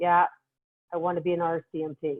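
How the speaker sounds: put-on very flat monotone. Retelling a young woman's answer in a meeting, imitating someone speaking very flat. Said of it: "So she was very flat".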